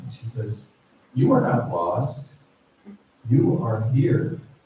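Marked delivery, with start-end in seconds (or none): 1.1-4.4 put-on mysterious, hypnotic voice. Retelling what the resort worker said on the phone: imitating a mysterious, hypnotic voice. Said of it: "she had this kind of mysterious, hypnotic voice".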